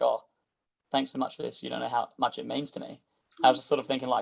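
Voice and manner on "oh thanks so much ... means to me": spoken really softly, hushed. Retelling what an elderly lady said as they were leaving: imitating someone speaking softly. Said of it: "really softly".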